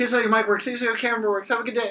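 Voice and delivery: very high, loud, rapid-fire auctioneer patter. Retelling handing out equipment to students on launch day, fast auctioneer voice. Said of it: "I probably sounded like an auctioneer".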